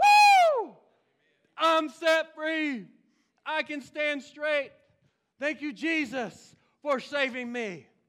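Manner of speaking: very loud, very slow, drawn-out joyful shout. Speaker acting out a woman praising God; imitating an excited shout. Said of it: "She was excited".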